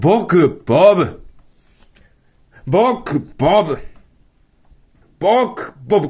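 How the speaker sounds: at a slow pace. Trying a tongue-twister after being told to say it slowly; said slowly. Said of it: "ゆっくり言ってみて".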